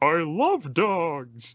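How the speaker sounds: high, swooping sing-song character voice, "dogs" stretched. Showing how the character is normally voiced: Travis Willingham impression. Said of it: "I pretty much give my imitation of Travis Willingham".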